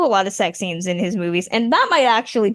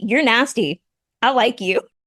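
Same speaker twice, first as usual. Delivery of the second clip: normal talking voice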